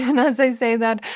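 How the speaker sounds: laughing. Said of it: "Sorry for laughing".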